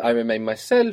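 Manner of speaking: plain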